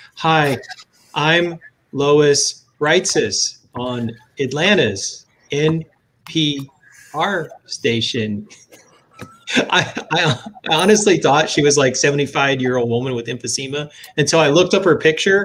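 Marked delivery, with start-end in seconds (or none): 0.2-8.5 very slow, with a breath after every word. Imitating Lois Reitzes on Atlanta NPR: Lois Reitzes impression, breath between words. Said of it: "sounds like she takes a breath between each word".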